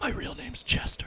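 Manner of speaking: hushed, soft whisper, barely audible. Voicing a costumed character who leans in to a player: quiet whisper. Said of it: "quietly whispers, he goes".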